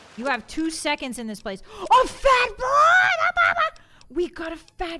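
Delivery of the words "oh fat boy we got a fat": very loud, very high, shrill, drawn-out yell. Speaker calling out to the guys while yelling. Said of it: "Sorry for yelling".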